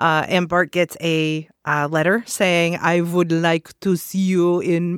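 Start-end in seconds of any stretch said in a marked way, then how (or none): 2.8-5.0 put-on French accent, slower. Quoting the letter Bart gets, mistakenly in a French accent. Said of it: "sorry, that was French".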